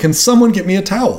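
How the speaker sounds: acted repeated yelling. Retelling how someone after a shower kept calling for a towel, imitating someone yelling. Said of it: "he was just yelling".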